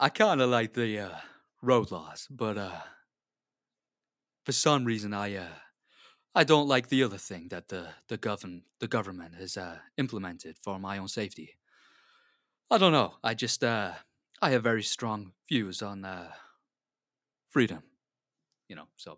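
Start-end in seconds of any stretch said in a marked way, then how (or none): 0.0-17.8 hesitant, loud American actor voice with many uhs. Talking about government rules in a put-on voice: Patrick Warburton voice. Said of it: "we'll go Patrick Warburton then".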